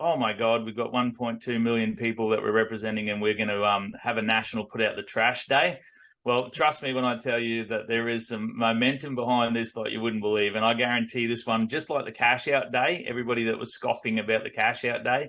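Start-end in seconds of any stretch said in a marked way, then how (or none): none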